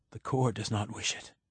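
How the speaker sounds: ordinary delivery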